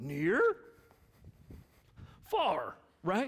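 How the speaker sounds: swooping, bouncy furry puppet monster voice. Recalling a Sesame Street segment for the audience, Grover impression. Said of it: "It's a pretty good Grover impression".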